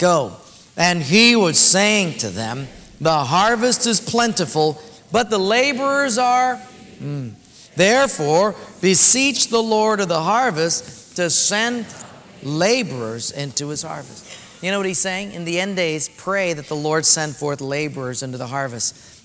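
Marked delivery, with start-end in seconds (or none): 0.8-14.6 most theatrical, grand Shakespearean stage voice. Leading a group reading scripture aloud together, grand theatrical Shakespearean voice. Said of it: "in our grandest, most theatrical, Shakespearean voices".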